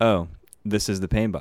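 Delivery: plain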